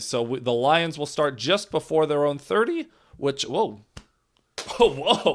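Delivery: voice cracking mid-"whoa". Play-by-play announcer calling a kick return when his voice cracks. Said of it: "Excuse me, voice crack".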